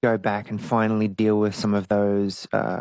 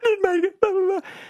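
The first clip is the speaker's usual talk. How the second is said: high-pitched fake sobbing. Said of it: "fake crying".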